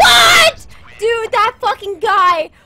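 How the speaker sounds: startled screaming. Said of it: "I'm sorry for screaming".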